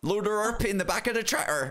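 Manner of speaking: put-on English farmer accent at a very high pitch. Describing an accent to a listener, the speaker demonstrates it: farmer accent. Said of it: "It's almost like a farmer accent".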